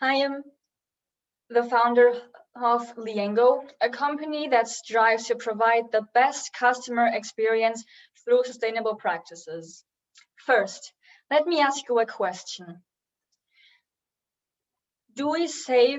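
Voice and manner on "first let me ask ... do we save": uneasy, nervous delivery with nerves showing. A company founder, opening a talk to the audience, speaks nervously. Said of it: "I'm very nervous right now".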